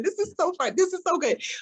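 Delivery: talking through laughter, giggly and high-pitched. Pitching an idea to others and breaking up: laughing while talking. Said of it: "I don't know why I'm laughing".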